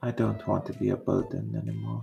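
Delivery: quiet muttering, mumbled under the breath. Voicing a character speaking while the group travels: muttering under her breath. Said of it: "You hear her mutter under her breath".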